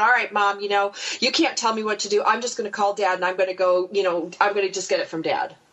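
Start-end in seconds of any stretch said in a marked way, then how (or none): none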